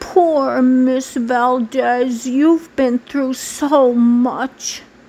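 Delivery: acted-out, slow, most pitiful, pathetic pitying voice. Retelling how she always offered sympathy to Miss Valdez, mimicking a pathetic voice. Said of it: "in her most pathetic voice she'd say".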